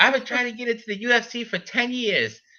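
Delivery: very high-pitched voice. Imitate the fighter you were shocked to hear in a promotional video, in a high-pitched Chris Curtis voice. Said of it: "He's got like a high pitched voice for his body".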